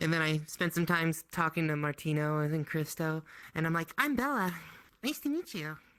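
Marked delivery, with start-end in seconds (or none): 4.0-5.8 character voice, pitch lifted slightly higher. Retelling own introduction to two people: raised-pitch voice. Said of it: "I raise the octave a little bit".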